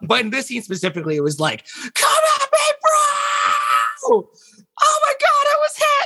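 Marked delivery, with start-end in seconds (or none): 1.9-6.1 put-on very high, drawn-out, loud shouting. Retelling shouted lines from a scene where everyone rushes a monster: retelling own shouting. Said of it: "we can literally just shout whatever".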